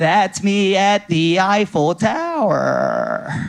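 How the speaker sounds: very slow, drawn-out influencer voiceover voice. Imitating a blind influencer's TikTok voiceover: imitating an influencer TikTok voiceover. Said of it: "do the stupid TikTok voiceover like an influencer".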